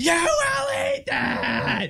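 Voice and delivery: acted very high, very slow, shrill, drawn-out scream. Retelling a scene nearby, the speaker acts out a mother yelling at her kid; imitating a mom screaming. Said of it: "Screams, top of her lungs, right back at him".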